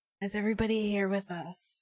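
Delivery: séance medium voice, calling out. Welcoming everyone back and asking who is there: like a seance medium. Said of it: "I sound like I'm conducting a seance".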